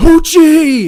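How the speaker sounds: high-pitched, very loud bellow. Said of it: "My dad's yelling".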